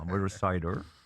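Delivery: put-on, mock West Country accent. On a radio show, right after asking to try it: West Country accent. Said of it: "can I do West Country then?".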